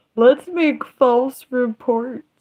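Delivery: dry, sarcastic, mocking echo. Mocking something someone just said, mockingly repeating someone. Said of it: "I'm being sarcastic. I'm mocking something someone just said".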